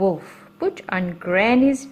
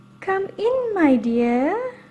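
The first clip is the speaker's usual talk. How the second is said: very high, gentle wolf voice, "dear" drawn out; 12 semitones higher than usual. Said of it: "The wicked wolf said in his soft voice".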